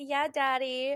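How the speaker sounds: mock seductive, put-on sexy voice. Retelling how a wife calls her husband daddy: imitating a sexy voice. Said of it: "saying it, like, sexy".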